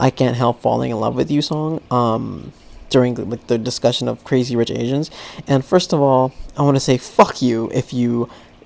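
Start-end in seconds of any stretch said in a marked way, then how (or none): none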